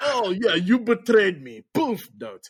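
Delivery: over-the-top hammed-up villain voice, pitch swooping wildly. Describing a favourite villain, doing an over-the-top Lavarovich villain voice. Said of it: "Just the the over the top villainness of him".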